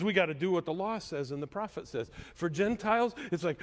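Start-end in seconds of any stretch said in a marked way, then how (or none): none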